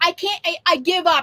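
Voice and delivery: put-on angry, mad-sounding voice. Retelling how the husband gave up on the bird: imitating husband sounding mad. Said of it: "and he was, like, all mad".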